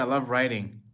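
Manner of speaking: plain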